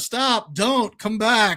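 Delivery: nonchalant, offhand, carefree delivery. Retelling a movie scene with little TVs: imitating Willy Wonka's nonchalant tone. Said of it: "so nonchalant about everything".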